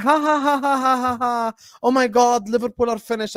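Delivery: taunting laughter and a jeer. Retelling how a rival fan reacted in the chat: imitating someone laughing and mocking. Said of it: "keying and laughing and going like".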